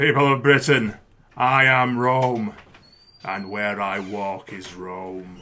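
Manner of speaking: deep, very slow, declaiming put-on voice. Asked to go on, the speaker gives his David Morrissey impression. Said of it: "I can do quite a good impression of David Morrissey".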